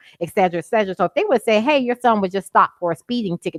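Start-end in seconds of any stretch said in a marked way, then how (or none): none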